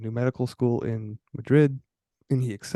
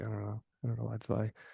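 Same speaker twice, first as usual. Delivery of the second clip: plain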